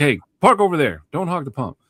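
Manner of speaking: firm, stern tone. Retelling a man's instruction at a gas station, imitating a stern order. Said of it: "he said it kind of sternly".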